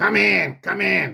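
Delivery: gruff, rough mafia-boss growl. Retelling a man inviting them in through the door, in a mafia-like voice. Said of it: "so like a mafia like voice".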